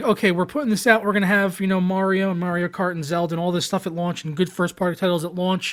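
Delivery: ordinary delivery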